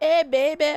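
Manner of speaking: high, rough New Orleans accent attempt. Retelling what men on a train called out: imitating a New Orleans accent. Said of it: "or whatever the fucking New Orleans accent is".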